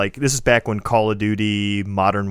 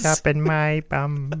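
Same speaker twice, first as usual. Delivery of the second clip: high, put-on cartoon voice; 6 semitones higher than usual. Chatting with Alex about consumerism, blurting a line in a Peter Griffin voice. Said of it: "when you're doing the voices".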